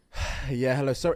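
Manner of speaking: quiet, breathless, panting voice.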